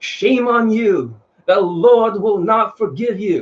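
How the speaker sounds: slow preaching cadence in pulpit style.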